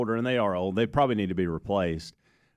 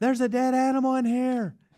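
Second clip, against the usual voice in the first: mock scream, higher pitch; 14 semitones higher than usual. Retelling how Amanda walked in and reacted: imitating someone screaming. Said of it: "Amanda walks in and starts screaming".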